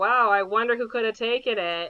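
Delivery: extremely sassy, cheeky delivery. Retelling a movie scene where a character answers: imitating a sassy line. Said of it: "the sassiest way possible".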